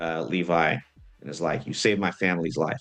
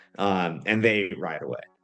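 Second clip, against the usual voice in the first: ordinary talk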